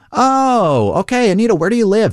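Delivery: high, mock polite voice.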